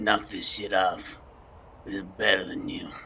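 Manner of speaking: hushed voice. Playing a character gripping another by the collar: whispering in character. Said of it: "and whisper".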